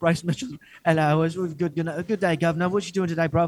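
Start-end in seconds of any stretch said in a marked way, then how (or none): 1.4-3.5 put-on British accent. Joking that a man now talks proper english: put-on british accent. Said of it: "He talks in proper English now, an actual British accent".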